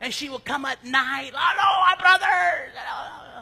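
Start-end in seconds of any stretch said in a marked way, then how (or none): 1.3-3.4 put-on very loud, booming, high Jamaican accent. Act out a psychic lady coming on at night with a greeting, in the psychic lady's Jamaican accent. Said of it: "she had a Jamaican accent".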